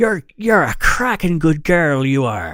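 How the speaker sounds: put-on Irish accent, loud, high. Thanking a listener from Northern Ireland for upping her pledge: put-on Irish accent. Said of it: "just picture that making that accent".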